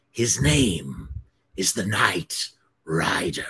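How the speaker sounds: slow, threatening, menacing hiss. Narrator reads the toe cutter's words to the agent, hissed. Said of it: "he hissed".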